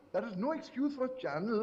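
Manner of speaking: plain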